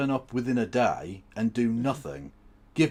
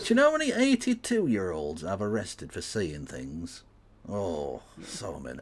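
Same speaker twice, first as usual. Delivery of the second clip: put-on sing-song Yorkshire accent; 3 semitones lower, 3 dB quieter than usual. Mocking police officers by voicing one in the first person: put-on yorkshire accent. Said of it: "I'm doing a Yorkshire accent for that one".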